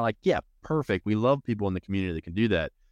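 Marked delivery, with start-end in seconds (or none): none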